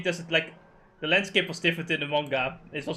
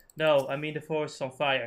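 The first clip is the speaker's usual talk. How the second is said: deadpan, flat, monotone, couldn't-care-less delivery. Acting out an anime scene as Fran: imitating Fran's monotone voice. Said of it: "in the most monotone voice".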